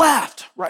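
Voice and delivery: very high, loud called-out yell.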